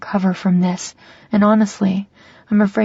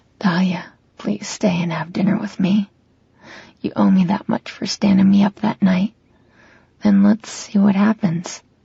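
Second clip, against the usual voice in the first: very soft, hushed, almost a whisper. Reading a scene where he asks her to stay for dinner: very soft, almost a whisper. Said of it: "He says this very softly, almost like a whisper".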